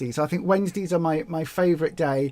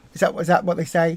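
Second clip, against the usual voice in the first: usual speaking voice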